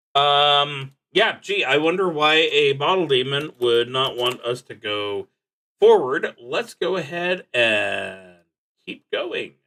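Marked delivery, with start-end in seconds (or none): none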